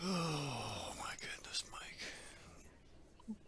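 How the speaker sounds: groaning. Reacting while trying to fix something, talking to mike: groaning. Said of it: "moaning and groaning about".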